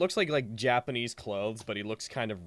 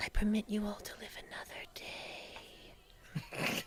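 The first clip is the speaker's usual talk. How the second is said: put-on little girl voice, higher and quieter; 10 semitones higher, 11 dB quieter than usual. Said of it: "the little girl's voice".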